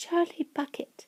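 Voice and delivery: timid, small, nervous, barely audible whisper. Narrating a story, a character gives his name in a small, nervous whisper. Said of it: "a small, nervous voice whispered".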